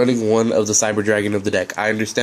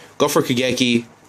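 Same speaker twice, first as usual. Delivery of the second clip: plain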